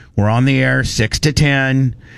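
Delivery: ordinary delivery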